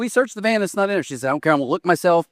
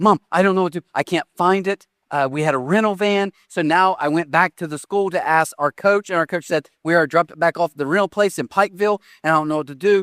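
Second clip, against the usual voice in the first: normal talking voice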